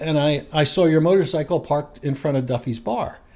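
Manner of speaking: plain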